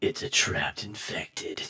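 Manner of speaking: deep, hushed, whispered movie-trailer style voice. Recounting a scene and switching into a deep movie voice. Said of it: "this is where my deep, like, movie voice comes in".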